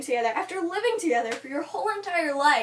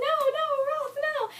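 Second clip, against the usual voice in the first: acted-out yelling, way up at very high pitch; 12 semitones higher than usual. Retelling a book scene where a character cries out: imitating a character yelling.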